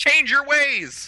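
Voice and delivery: very high, shouted yell, in character. Player character shouting at a fleeing enemy, in-character yell. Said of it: "I'll yell at him".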